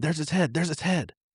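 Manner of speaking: mock piercing, high-pitched, repeated shouting. Retelling how a companion screamed on spotting the snake: imitating someone screaming. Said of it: "she starts screaming".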